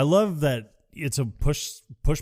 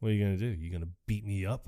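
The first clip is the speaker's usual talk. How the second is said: mock serious tone, lower and quieter; 5 semitones lower, 8 dB quieter than usual. Retelling a movie scene where the character turned serious: imitating a character turning serious. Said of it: "turned serious".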